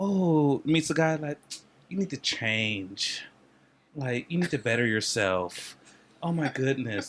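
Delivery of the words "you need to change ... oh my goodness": put-on woman's voice, lower and quieter. Acting out a woman telling a guy he needs to change: imitating a woman. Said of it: "here goes a woman".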